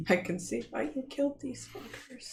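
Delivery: close, hushed whisper. Pulling another character close and speaking to him: whispering in character. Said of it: "I'm gonna whisper to Vitter".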